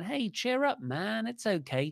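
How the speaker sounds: goofy sing-song cheer. Retelling a wrestling scene, imitating Drew McIntyre goofing off. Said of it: "goofing off".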